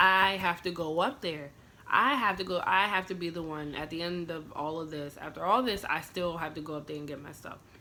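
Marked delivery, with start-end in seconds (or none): none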